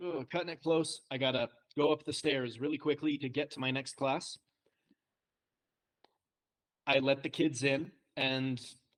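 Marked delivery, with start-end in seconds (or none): none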